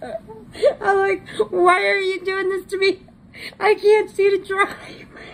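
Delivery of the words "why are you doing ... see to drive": high, pleading laughter through tears. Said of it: "I was laughing so hard".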